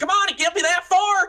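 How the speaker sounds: screaming. Voicing someone in the distance during a sprint down an alley: screaming. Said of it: "someone screaming".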